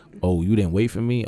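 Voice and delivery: attitude-filled voice. Retelling what the girl said: imitating someone with attitude. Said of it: "Attitude right there".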